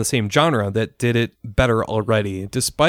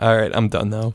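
ordinary talk

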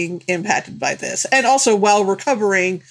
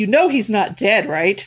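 imitated loud, forceful whisper. Retelling a moviegoer spoiling the film: imitating a loud whisper. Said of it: "loudly whispered to the other one".

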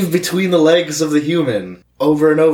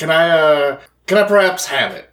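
proper cat voice, higher pitch; 3 semitones higher than usual. A player voicing a cat asks another character in the role-play: proper Aristocats cat voice. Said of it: "I should probably have a cat voice. Mm. Yes. I don't think it's a cat. I feel like a cat would have a proper voice. Aristocats".

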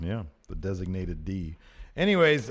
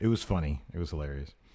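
ordinary talk, nothing marked

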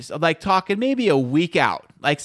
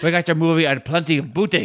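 put-on swashbuckling pirate voice. Joking about getting movies from pirates: put-on pirate voice. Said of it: "if you like the pirates".

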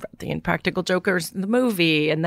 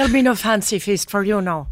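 put-on Irish brogue voice; 2 semitones higher than usual. Retelling a woman's words about the cat, in a brogue voice. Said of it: "in that brogue".

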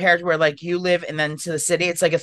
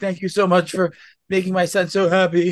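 put-on tearful voice. Imagining Poppy hugging Bay and crying: imitating Poppy crying. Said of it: "hug him and cry and be like".

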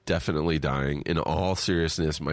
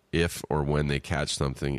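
ordinary delivery

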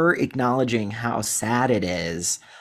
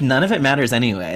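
ordinary talk

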